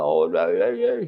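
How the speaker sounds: mock tearful, high, sobbing crying voice. Retelling a story of a daughter calling her mother: imitating someone crying. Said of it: "she's just crying to mama".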